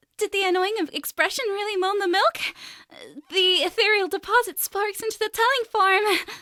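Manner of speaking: perky, peppy, very high voice. Asked to read a test sentence in a peppy style voice. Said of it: "peppy style voice".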